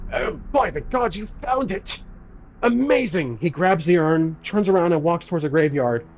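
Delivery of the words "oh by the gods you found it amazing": put-on weird scruffy voice, higher and slower. Retelling a scene where a man receives a found urn: weird scruffy short-guy voice. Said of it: "a short, really scruffy looking guy with a very weird voice".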